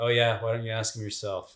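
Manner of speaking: put-on totally chill, mellow, offhand, nonchalant monotone. Retelling a character answering calmly near the Tusken Raiders: imitating a mellow, chill monotone. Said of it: "totally mellow and chill and just monotone".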